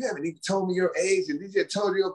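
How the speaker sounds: irritated, angry, accusing, scolding woman's voice. Retelling what upset women said to the speaker, imitating a mad woman. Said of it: "women get mad at me".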